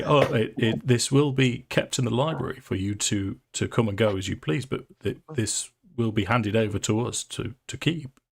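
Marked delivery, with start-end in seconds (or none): none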